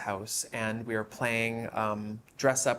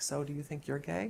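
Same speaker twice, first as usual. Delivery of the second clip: very quiet, hushed, soft voice; 4 semitones higher, 5 dB quieter than usual. Retelling a question the mother asked in the kitchen: imitating someone speaking very quietly. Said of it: "she was very quietly".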